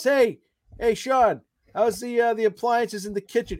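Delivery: high, loud, shouted calling yell. Recapping a scene where Lassie yells over to Sean; retelling Lassie's yell. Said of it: "And then he yells".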